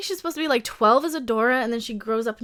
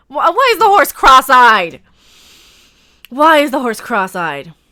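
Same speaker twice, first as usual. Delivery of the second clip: yelling, much louder; 15 dB louder than usual. Reacting to a show while greeting viewers in chat, yelling. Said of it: "Sorry, I'm yelling".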